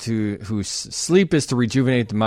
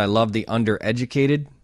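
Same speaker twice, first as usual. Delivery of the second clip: ordinary delivery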